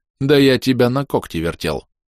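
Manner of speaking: plain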